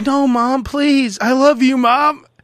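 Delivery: high-pitched, very slow pleading. Retelling the film's ending: Macaulay Culkin pleading. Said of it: "Macaulay Culkin's like".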